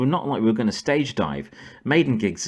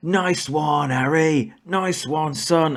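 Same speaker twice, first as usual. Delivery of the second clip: acted out, slow, drawn-out crowd-style yelled cheer; 6 semitones higher than usual. Retelling how the crowd cheered the musician: imitating a crowd yelling. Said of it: "all the crowd around us just started yelling".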